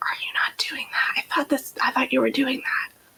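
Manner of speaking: hushed, breathy, close, leaning-in whisper. Voicing a character leaning over the altar, asking the officiant: whispering in character. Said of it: "leans over the altar to whisper".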